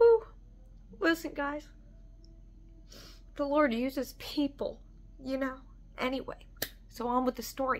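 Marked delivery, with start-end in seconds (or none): 1.0-5.6 tearful, crying through the words, voice breaking. Telling a story to an audience, the speaker is crying while speaking. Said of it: "I'm sorry for crying".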